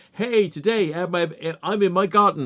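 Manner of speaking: stop-start unfinished fragments. Imitating a video maker whose clips cut off mid-sentence: imitating a YouTuber's cut-off sentences. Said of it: "he never finishes his sentence".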